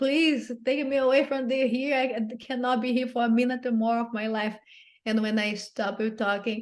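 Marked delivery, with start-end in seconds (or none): 0.0-4.6 mock tearful, desperate, crying pleading voice. Recalling pleading desperately with a calm man, retelling a desperate crying plea. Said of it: "crying like".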